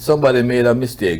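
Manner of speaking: ordinary talk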